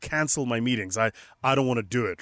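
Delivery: ordinary talk, nothing marked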